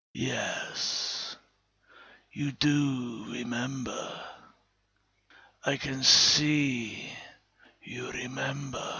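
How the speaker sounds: very quiet, soft, guttural voice with melting tones. A creature addresses a woman who recognizes the voice, guttural imitation of Rory's voice. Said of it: "It too seemed diseased, its body bandaged from head to foot, the bindings stained by issues of blood and pus. / It spoke with melting tones, ... More guttural, / It spoke with melting tones, ... more".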